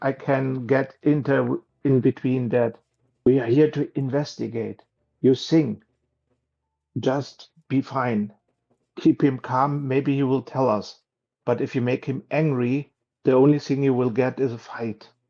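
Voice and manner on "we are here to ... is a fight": whispering in a character voice. Playing a character who slips in a word to a companion: whispering in character. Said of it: "I try to whisper to him".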